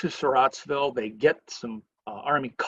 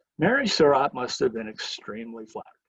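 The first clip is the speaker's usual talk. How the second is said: ordinary delivery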